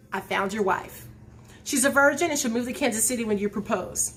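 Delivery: ordinary delivery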